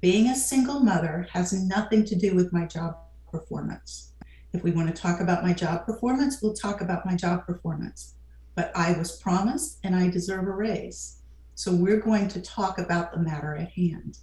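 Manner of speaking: slow, low, measured speech with deliberate steady pauses. Speaker acts out how she would now speak to her boss: slow, low, measured speech. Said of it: "I would slow my speech, lower my tone of voice. I'd use strategic pauses".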